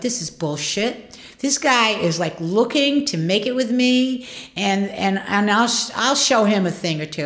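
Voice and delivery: normal talking voice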